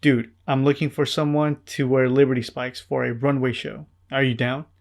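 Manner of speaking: ordinary talk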